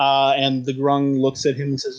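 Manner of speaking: ordinary delivery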